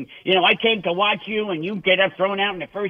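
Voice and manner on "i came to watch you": normal talking voice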